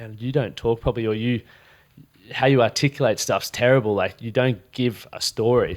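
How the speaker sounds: ordinary delivery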